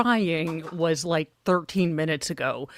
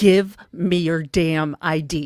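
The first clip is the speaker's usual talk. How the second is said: very slow, loud, controlling, commanding voice with bass; 5 dB louder than usual. Showing how to demand a woman's ID properly, in a controlling voice. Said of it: "That is how you have a controlling voice".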